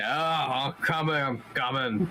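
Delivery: put-on weird giant accent. A game narrator voices someone behind a door in a weird giant accent. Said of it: "in like a weird like giant accent".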